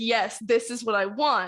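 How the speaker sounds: plain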